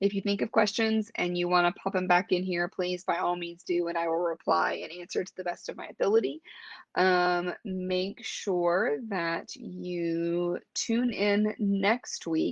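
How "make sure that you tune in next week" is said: slow, drawn-out pace, much slower. Signing off to viewers while looking up next week's schedule, talking slowly. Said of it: "I am talking slow".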